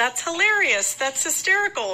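put-on high yelling through bursts of laughter. Recounting what they kept shouting while a lady reassured them, retelling a yell. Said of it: "I just kept yelling".

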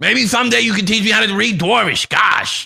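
loud, very high-pitched shouting. Repeating a request to another player who said they couldn't hear: yelling. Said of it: "You don't have to yell".

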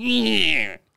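high, stretched-out yowl like a hurt cat. Imitating the other speaker's answer, like a cat whose tail got hit. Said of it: "Like a cat that just someone on a, with a rocking chair hit its tail".

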